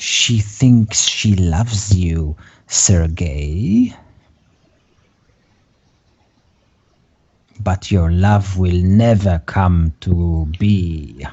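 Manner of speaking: whispering. Voicing a woman who grabs you and says something strange in your ear, whispering. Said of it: "She whispers".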